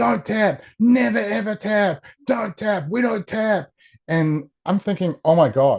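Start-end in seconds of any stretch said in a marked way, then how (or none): 0.0-3.7 frantic, high-pitched screaming. Recounting a mother yelling at her daughter during a match, retelling a mother screaming. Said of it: "she's screaming at her daughter".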